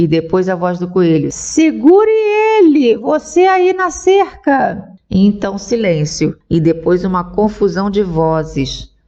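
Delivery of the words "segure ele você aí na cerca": very high-pitched, slow, drawn-out commanding tone. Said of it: "capítulo 4 - O coelho manda [name] o Lagarto - [name] #audiobook #audio (uploaded 2024) / O patrão diz que você é que vai descer pela chaminé".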